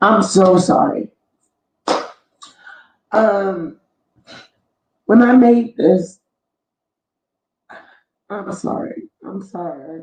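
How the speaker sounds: slow, emotional, apologetic voice with feelings welling up. Apologizing while presenting something they made, getting emotional. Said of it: "I did not mean to get emotional".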